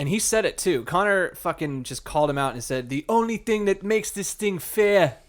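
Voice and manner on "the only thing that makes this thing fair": put-on terrible, clumsy Irish accent, pitched up. Quoting Conor calling out Mayweather, in a terrible Irish accent. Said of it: "This is a terrible Irish accent going".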